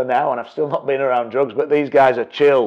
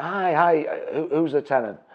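normal talking voice

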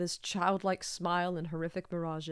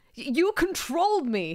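very high, shrill, loud, spat-out anger; 10 semitones higher, 7 dB louder than usual. A man answers a voice over the speaker, spat in anger. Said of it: "he spat, a shred of anger showing itself at last".

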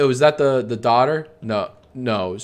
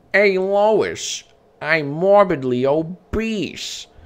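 very slow, high-pitched cartoon voice, dragged out; 7 semitones higher than usual. Showing off a Peter Griffin impression from Family Guy. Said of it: "Here's my Peter Griffin".

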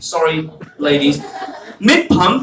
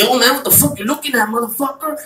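mock-aggressive drunk voice, Mexican accent, higher, faster; 4 semitones higher, 3 dB quieter than usual. The speaker retells a drunk man picking a fight in a bar: imitating a drunk mexican guy. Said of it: "Mexican guy comes in".

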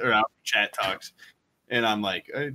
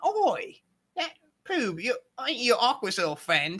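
very high, scrappy street-urchin chatter; 9 semitones higher than usual. Retelling a streamer's greeting to subscribers: imitating a streamer as a street urchin. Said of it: "your impression of him sounds like a fucking street urchin".

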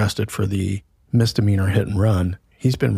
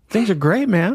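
put-on very high, easygoing, relaxed little kid voice; 12 semitones higher than usual. Retelling a little kid greeting him while buying groceries: imitating Will, so relaxed. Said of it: "just so relaxed".

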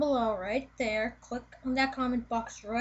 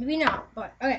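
normal talking voice

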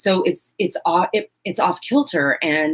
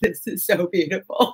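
slow, put-on tearful speech, words through tears. Retelling watching someone touch the costume: retelling own crying. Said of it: "I'm in the costume crying".

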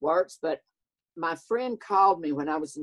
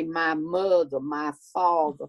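bad, slow, overdone, dragged Southern belle drawl. Complaining about people who get Southern accents wrong; bad Scarlett O'Hara Southern accent. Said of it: "They try to talk like Scarlett O'Hara".

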